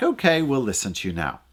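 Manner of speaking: ordinary talk, nothing marked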